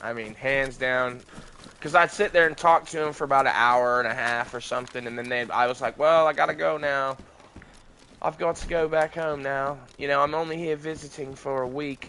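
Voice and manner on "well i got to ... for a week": fake British accent, casual chatty manner. Retelling own past words to two visiting girls: put-on British accent. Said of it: "I had them convinced that I was British".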